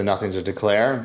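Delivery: ordinary delivery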